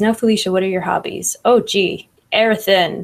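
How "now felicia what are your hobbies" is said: ordinary talk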